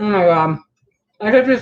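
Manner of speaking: speaking with mouth full of food. Tasting the lentils just made, talking with mouth full. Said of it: "sorry, my mouth is full".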